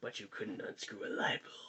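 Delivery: menacing, ominous, very quiet, barely voiced whisper. Acting out the small voice inside him, in a mock-menacing whisper. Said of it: "a small voice whispers menacingly".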